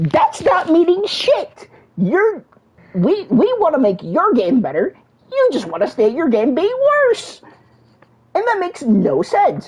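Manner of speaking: angry, heated, worked-up, fired-up rant. On a podcast episode, venting at the game's community: heated rant. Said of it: "I'm just heated".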